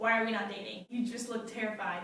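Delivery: ordinary delivery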